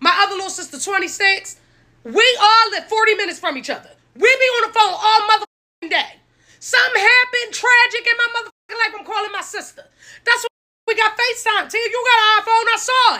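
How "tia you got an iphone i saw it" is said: loud, heated yelling. A woman, telling of calling her sister, yelling. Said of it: "the fact that she's yelling".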